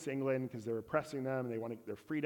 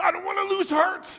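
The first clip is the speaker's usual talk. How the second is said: very loud, very high shout; 13 dB louder than usual. Retelling what a man told his father, loud shout. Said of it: "like I might have just with my volume there".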